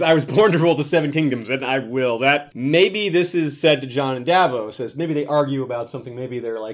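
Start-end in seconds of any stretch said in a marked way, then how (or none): none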